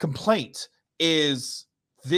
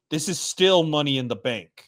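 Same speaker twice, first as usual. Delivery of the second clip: mock, raised-voice, loud, emphatic delivery; 4 dB louder than usual. Retelling a loud remark made while watching the match: imitating himself saying it loudly. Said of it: "loudly, I'm like".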